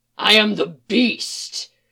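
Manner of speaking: deep, slow, rasping, menacing low rumble. Reading a story, the new villain answers a woman's question, deep rasping dangerous voice. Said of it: "voice deep and rasping and full of danger".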